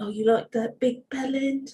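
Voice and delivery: put-on polished, proper southern English accent. Imitating an ex-boyfriend: southern british accent. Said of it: "a nice Southern British guy".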